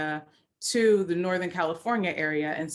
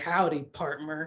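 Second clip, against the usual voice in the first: big, deep, low voice. Recalling how an uncle always greeted them, imitated in a deep voice. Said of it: "with that deep voice".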